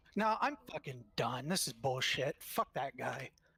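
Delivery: exasperated, frustrated, fed-up rant. Arguing with a raid teammate during progression attempts: frustrated. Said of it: "We're all a little bit frustrated".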